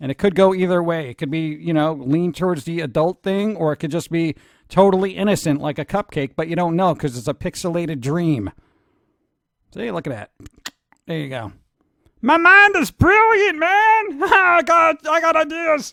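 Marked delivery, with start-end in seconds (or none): 12.2-15.9 weird, very high-pitched, slow, drawn-out voice. Voicing a dreaming robot's thought: weird Pee Wee Herman-like voice. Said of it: "That was a weird voice for me".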